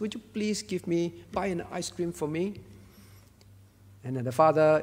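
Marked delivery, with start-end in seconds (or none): 0.0-2.6 put-on tearful pleading child voice, quieter. Acting out a child asking her father for ice cream: imitating a child pleading in tears. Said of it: "tears in her eyes".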